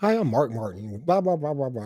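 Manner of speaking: folksy TV commercial pitchman delivery. Recalling the Winn-Dixie commercials: Mark Martin impression. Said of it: "almost like a Ross Perot-like voice".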